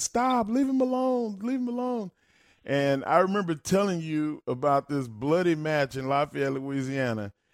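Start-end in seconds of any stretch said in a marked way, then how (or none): 0.0-2.1 put-on very high, shrill, childlike screaming. Recounting a bloody beating, the speaker reenacts what they screamed: retelling own screaming. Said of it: "And I'm screaming".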